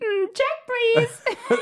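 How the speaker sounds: very high, squeaked-up catchphrase-style delivery. Answering a request for an impression of a character: Shelby impression. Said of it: "It's like".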